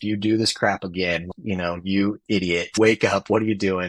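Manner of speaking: ordinary talk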